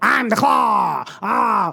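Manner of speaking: very slow, rough, creaky, drawn-out monster voice. Quoting a movie scene where Jim Carrey plays with his son: Jim Carrey as the claw. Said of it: "Jim Carrey plays with his son and is like".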